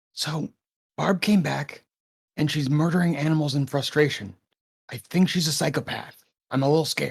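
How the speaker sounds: whispering in a hush. Voicing a player character in a dark cave: whispering in character. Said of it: "Haze is just whispering what she's been saying".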